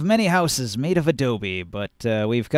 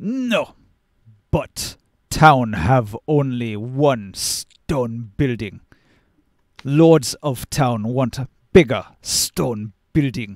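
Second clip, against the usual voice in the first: giant character voice, deep bass; 2 semitones lower than usual. Voicing a giant foreman answering a player's question, in a deep bass giant voice. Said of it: "in his deep bass voice".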